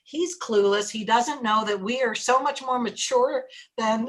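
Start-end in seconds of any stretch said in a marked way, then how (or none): none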